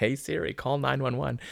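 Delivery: high, urgent, mock yell.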